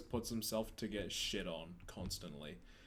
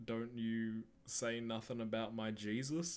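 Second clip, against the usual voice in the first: slow, drawn-out, pointed delivery; 2 semitones higher than usual. Retelling how A J Styles answered an insult: imitating A J Styles. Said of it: "A J Styles was like".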